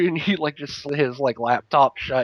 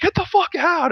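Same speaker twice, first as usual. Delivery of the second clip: put-on scream, higher pitch. Retelling the brother yelling after the door opened: imitating brother screaming. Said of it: "looks at me and screams".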